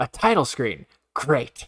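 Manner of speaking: mock dripping sarcasm, unimpressed, swooping sing-song. Reading a viewer's comment aloud after noting its sarcasm: sarcastic, as Godzilla Reader. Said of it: "I can hear the sarcasm from Godzilla Reader".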